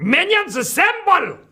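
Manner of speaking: very high, loud belted-out call. Giving another speaker a cue line to try: Gru voice. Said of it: "Gru always says that".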